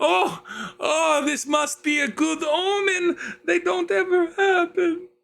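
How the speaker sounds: very high, tearful, sobbing crying wail. A woman whose family is ill pleads with a visitor she takes for a sign, wailing, crying. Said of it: "begins fully wail crying".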